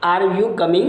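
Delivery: rising pitch lifting on you at the end.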